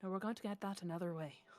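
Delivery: quiet speaking voice. Replying to Askel in his mind as Barnes: speaking quietly. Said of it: "reply to Askel quietly".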